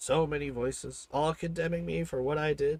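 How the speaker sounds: plain reading voice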